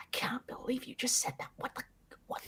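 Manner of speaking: speaking very softly. Voicing Morgaine muttering to herself after speaking: very quiet voice. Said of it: "after that very quietly".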